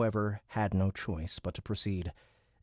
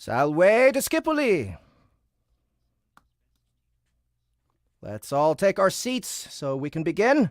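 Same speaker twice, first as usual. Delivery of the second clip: very high, very loud, sing-song teacher voice; 9 semitones higher, 9 dB louder than usual. A Latin teacher greets his teenage students to begin class, in his best teacher's voice. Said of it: "Austin summoned his best teacher's voice".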